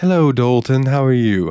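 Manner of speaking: put-on posh English accent, high and slow. Recalling how Hazel greeted Dalton, imitating Hazel's English accent. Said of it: "Hazel has an amazing accent".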